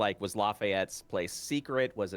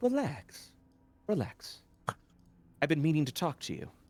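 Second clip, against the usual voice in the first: confidential, confiding stage whisper; 6 semitones higher than usual. In vampire society, the speaker's character moves in to talk to someone: as if half-whispering. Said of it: "as if I'm whispering".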